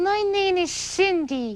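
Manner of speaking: put-on high little girl voice. Puppeteer demonstrates a puppet voice when asked, in a little girl's voice. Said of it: "start with a little girl's voice".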